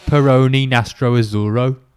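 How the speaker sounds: very loud Birmingham accent. Saying the beer's name after offering to do it in Brummy: Brummy accent. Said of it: "So I can do it in Brummy".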